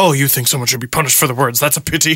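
fast cartoon anime supervillain voice. Retelling how a man tweeting at him talked, in a Dragon Ball Z villain voice. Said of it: "talking like a Dragon Ball Z villain".

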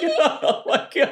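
high, laughing in disbelief. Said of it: "he's just like".

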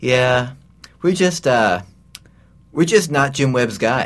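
mock dazed, slow, far-off spacey voice. Retelling what a dazed woman at the door said: imitating a spacey, not-quite-there voice. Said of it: "says in this kind of spacey, not quite there voice".

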